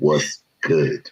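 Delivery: imitated deep voice. Retelling how a friend greeted him, imitating a deep voice. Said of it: "he got that deep voice".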